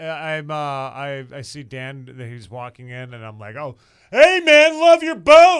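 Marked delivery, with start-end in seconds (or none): 4.1-5.6 booming, loud, boisterous voice, rising pitch. Retelling running into someone at the store: retelling a loud boisterous greeting. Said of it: "I just gotta say it really loud and boisterously in public".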